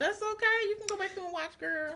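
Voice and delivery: very high, sing-song, cooing voice.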